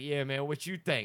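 talking in street slang.

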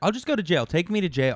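mock high, pissed-off, fed-up angry blurt. Retelling own angry reply to a collections agent: retelling an angry outburst. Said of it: "I was so pissed off".

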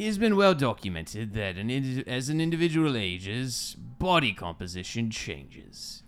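put-on pirate voice and accent. Asked to read the article, a speaker reads it aloud in a pirate accent. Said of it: "I'm going to go with a pirate accent".

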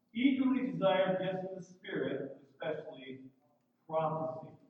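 ordinary delivery

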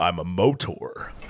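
low, slow commercial announcer voice. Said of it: "such a great way of being like".

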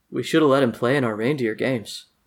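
muttered under the breath. Narrating one of the warlocks standing around, quietly under his breath. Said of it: "quietly say under his breath".

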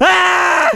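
high, loud panicked yell.

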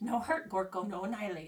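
goblin creature character voice. Game master voicing the goblin Gorko as he relaxes: Gorko goblin voice. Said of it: "and he's like".

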